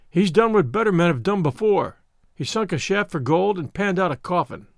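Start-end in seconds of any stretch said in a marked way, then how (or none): none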